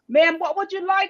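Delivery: booming, loud, very high, patronizing talking-down voice. Retelling how restaurant staff addressed her in her wheelchair, in a loud voice. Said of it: "in a loud voice go".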